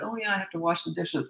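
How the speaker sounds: calm, unbothered. Showing how to walk away from someone who was yelling, not angry at all. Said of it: "Like you're not angry at all".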